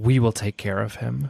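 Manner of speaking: acted, hushed whisper. Voicing a character who calms an ally mid-fight: whispering in character. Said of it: "whisper in her ear".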